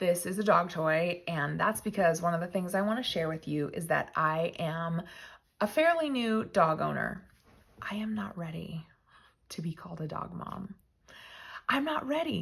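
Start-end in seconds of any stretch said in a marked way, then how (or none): 7.8-12.4 hushed, whispered voice. A new dog owner tells viewers something, whispering.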